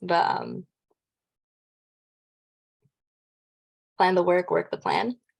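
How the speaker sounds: choked-up, emotional voice, catching and breaking. Quoting a saying he always told us, choked up. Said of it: "I get all choked up in all this".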